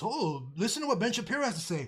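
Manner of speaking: ordinary talk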